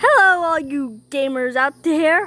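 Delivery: voice cracking a little. Greeting gamers at the start of a video, voice squeaking a little. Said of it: "my voice squeaked a little bit".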